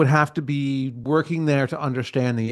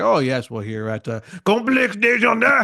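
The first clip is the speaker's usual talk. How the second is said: fake French accent; 8 semitones higher than usual. Imitating one of the guys saying the complex's name: imitating a put-on French accent. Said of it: "a stereotypical French character".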